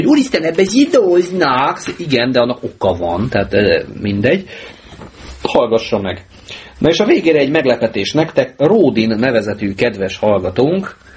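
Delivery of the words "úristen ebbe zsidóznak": high, slow mock shriek. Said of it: "elkezd sikítozni".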